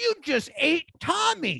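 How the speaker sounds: imitated children's mockery. Retelling how schoolkids laughed and taunted: imitating kids taunting. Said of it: "the kids laugh, and they're like".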